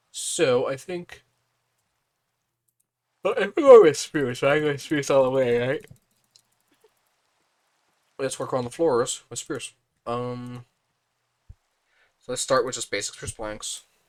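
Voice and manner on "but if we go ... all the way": loud, cracking voice with a frog in throat. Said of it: "Sorry about my voice there".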